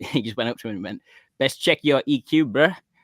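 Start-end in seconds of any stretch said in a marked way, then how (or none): 1.4-2.8 loud put-on old South African rocker accent. Retelling what an old rocker said to his mate: imitating a south african accent. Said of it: "this old South African rocker guy".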